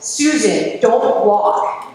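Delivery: far-carrying, loud, booming yell. Retelling how McClanahan screamed at Susan across the course, McClanahan's booming scream. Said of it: "screaming in his booming voice".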